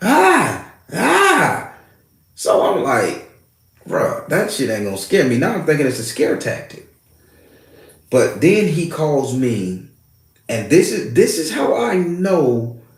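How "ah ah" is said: mock very high, drawn-out, swooping cries of ah. Telling a story, a speaker imitates a spirit guy screaming at him. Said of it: "he was like just screaming at me".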